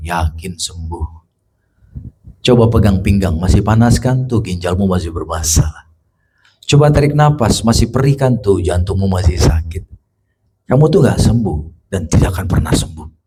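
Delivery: very deep, menacing, intimidating devil voice. Preaching to a congregation, acting out the devil doubting a healing: voicing the devil. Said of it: "tiba-tiba dengar suara setan".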